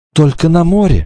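high, quavering, trembling, frightened voice. A narrator reads a girl's reply as they flee pursuers, in a trembling voice. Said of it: "сказала она дрожащим голосом".

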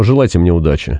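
usual speaking voice

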